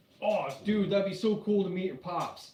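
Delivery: put-on Bronx accent. Retelling a friend's messages about meeting a father: imitating Michael Smith's Bronx accent. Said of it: "with that Bronx accent".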